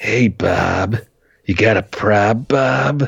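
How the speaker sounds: very slow, drawn-out, raspy voice. Retelling a film character's line: imitating a raspy-voiced man. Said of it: "the raspy voice guy that he keeps hearing is like".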